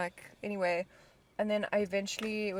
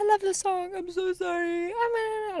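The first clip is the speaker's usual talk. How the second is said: put-on very high, slow, lurching drunken ramble with mood swings; 11 semitones higher, 4 dB louder than usual.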